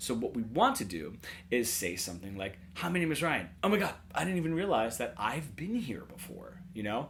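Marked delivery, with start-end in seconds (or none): 2.7-6.6 lively, expressive, a bit more emotional delivery. Showing how a phrase sounds said with a little more emotion. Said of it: "Now I'm saying it with a little bit more emotion".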